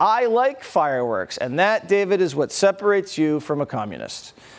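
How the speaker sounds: normal talking voice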